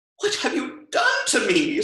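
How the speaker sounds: very high squealing cry. Narrator voices the princess, just turned into a warthog, squealing. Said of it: "squealed the princess".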